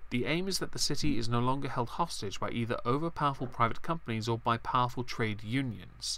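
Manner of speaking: plain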